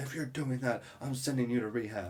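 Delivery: acted, mild, freaked-out yelling. Retelling a parent's reaction to a joke: imitating mom yelling. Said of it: "immediately started yelling".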